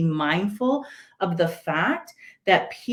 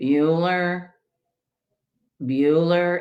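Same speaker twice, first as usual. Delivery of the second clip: dull, level teacher-like voice; 3 semitones lower than usual. Telling listeners about the film's history teacher taking attendance, monotone Ferris Bueller teacher. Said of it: "And he's so monotone".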